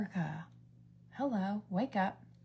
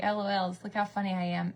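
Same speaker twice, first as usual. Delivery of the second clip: usual speaking voice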